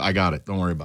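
seething, furious, angry brush-off. Retelling brushing off questions before the show: retelling own furious reply. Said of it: "I was furious".

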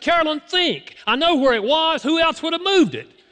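very high, screaming voice. Retelling an argument with his wife over a missing briefcase, retelling screaming at her. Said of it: "I was screaming at my wife".

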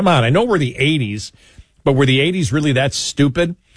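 plain

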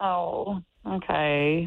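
plain, straight disappointment in the voice. Reacting on hearing that Dylan won the date: disappointed. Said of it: "there was straight disappointment in that tone".

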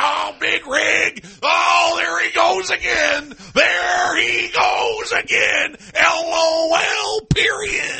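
very slow, drawn-way-out, gravel-voiced holler. Imitating someone's replies to tweets: Yosemite Sam voice. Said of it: "You sound like Yosemite Sam when you did that".

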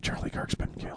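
whispered speech. Retelling how a woman leaned over mid-class to tell the teacher news, whispered.

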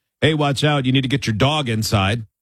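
plain

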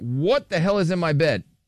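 normal talking voice

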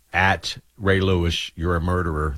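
ordinary delivery

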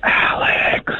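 soft, barely voiced whisper. Doing a whisper out for a friend on air when asked: whispering. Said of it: "and you whisper it".

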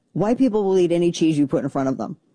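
plain

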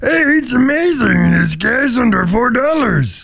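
high squeaky critter voice. Discussing Yoda's voice, a speaker does a squeaky Yoda voice. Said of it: "Yoda's got a lot of squeaking".

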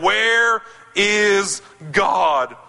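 harsh, demanding, very stern tone. Retelling a preacher repeating his question to a boy, acting out an even sterner voice. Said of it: "in an even sterner voice".

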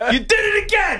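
mock, very high-pitched screamed outburst. Speaker retells a prank video, imitating the dad screaming at his kid. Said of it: "So he's screaming out".

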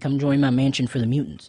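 ordinary talk

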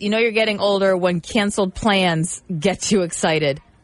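ordinary delivery

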